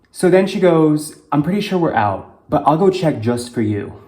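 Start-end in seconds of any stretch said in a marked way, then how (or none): 1.3-3.8 pointed, thick passive-aggressive tone. Retelling what she said while giving the speaker attitude, mock passive-aggressive. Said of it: "says it very passive aggressively".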